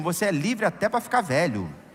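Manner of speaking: normal talking voice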